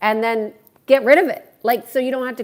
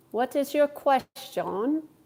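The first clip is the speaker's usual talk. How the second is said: soft, so-so, half-attempted put-on British accent; 4 semitones higher, 6 dB quieter than usual. Asked again for the British accent, trying it out in a put-on British accent. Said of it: "That's my British accent".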